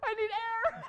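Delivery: high, loud, laughing, gasping mock distress. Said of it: "And I'm like".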